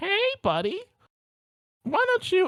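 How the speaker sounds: tiny, very high little clown voice. Describing walking home in a horror scenario, a clown calls out: little clown voice. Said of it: "hear a little voice go".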